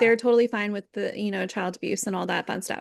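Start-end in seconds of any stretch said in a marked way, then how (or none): none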